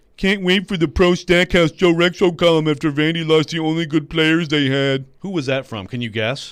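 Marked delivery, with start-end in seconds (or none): 0.2-5.1 put-on proper, correct voice. Reading a tweet aloud in the voice of its author: imitating Stillman. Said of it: "I'm gonna read it in the proper voice".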